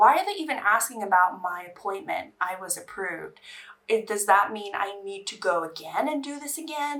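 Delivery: ordinary delivery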